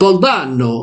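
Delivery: put-on Italian accent. Trying the name again in an accent that comes out Italian-sounding. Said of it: "Não, isto é italiano".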